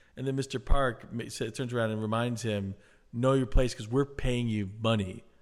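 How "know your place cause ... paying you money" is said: ordinary talk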